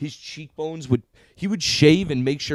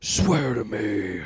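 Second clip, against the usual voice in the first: put-on voice dropped an octave into deep growl. Recalling a hero's line from the whole movie, imitating a deep growly voice. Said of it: "He went full Cookie Monster".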